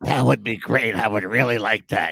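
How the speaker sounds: scratchy, rasping, rough-throated voice. Retelling how someone answered an offer: imitating Jeff's raspy voice. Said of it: "he had that raspy voice".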